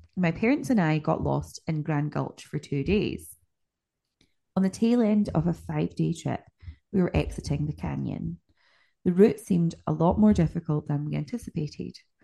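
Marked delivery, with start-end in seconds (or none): none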